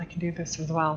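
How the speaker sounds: in a whisper. Voicing her as she points a finger at you, whispering. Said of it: "and then whispers".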